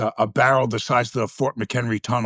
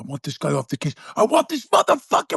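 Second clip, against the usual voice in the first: mock high, swooping, furious angry screaming; 7 semitones higher than usual. Recounting a guest yelling during a scene take: imitating Robin screaming angrily. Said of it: "he starts screaming at me".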